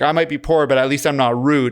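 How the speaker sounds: normal talking voice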